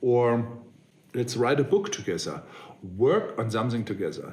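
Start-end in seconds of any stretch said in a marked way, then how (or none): none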